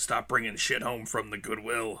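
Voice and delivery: fed-up, mad woman's voice, heavy smoker rasp. Imitating a wife telling her husband to stop shopping at Goodwill: heavy smoker's voice. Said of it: "She sounds like a heavy smoker".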